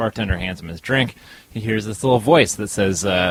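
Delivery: plain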